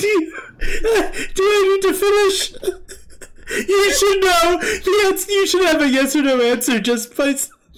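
breaking up with laughter. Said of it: "I'm trying to compose myself".

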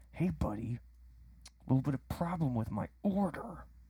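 slow, quiet, forced through clenched teeth. Retelling a man phoning about a problem with his order, imitating talking through clenched teeth. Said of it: "I can tell it's through like clenched teeth".

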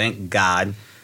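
normal talking voice

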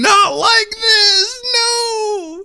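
very high, very slow, drawn-out screaming. Recalling the listener spilling soda on a keyboard, retelling a scream. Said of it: "you were screaming".

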